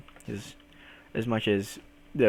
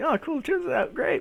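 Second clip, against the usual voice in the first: very high, forced, fake-cheerful brightness. Retelling pretending everything was fine: imitating faking being fine. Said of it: "I had to pretend that it was, that it was fine".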